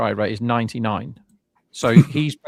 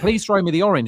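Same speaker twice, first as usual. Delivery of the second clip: mock, high, begging, pleading shout; 8 semitones higher than usual. Describing a player staring with hands out, retelling someone shouting. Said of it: "shouting at him".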